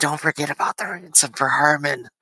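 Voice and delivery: hushed whispering. Voicing a character speaking over someone's right-hand shoulder: whispering. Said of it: "just kinda whispering".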